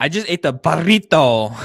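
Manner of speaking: put-on very loud, high, over-the-top Spanish accent. Mimicking people who overdo foreign words: imitating an overdone accent on foreign words. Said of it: "overly try to say foreign words with an accent".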